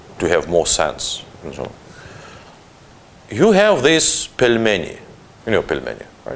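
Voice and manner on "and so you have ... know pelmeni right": very slow, drawn-out, deliberate delivery. Retelling a joke, as a Georgian explaining a dish to Russians, speaking very slowly. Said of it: "always speaking very slowly".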